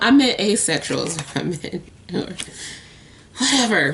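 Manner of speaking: speaking through chuckling laughter. Correcting a slip of the tongue to viewers: laughing while talking. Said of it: "I'm just laughing at my own goofiness".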